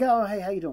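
normal talking voice

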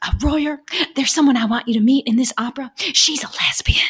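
put-on whisper. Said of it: "something that gets whispered".

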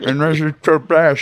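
voice sounding as if speaking through braces. Imitating the other speaker's manager: talking like braces in mouth. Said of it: "talk like he has braces in his mouth".

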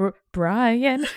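reluctant, faltering call. Retelling calling to dad in a room of his colleagues: imitating a half-hearted mutter under breath. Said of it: "half-hearted and under my breath".

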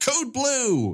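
mock yell, pitched high.

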